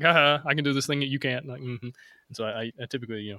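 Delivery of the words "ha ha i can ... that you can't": plain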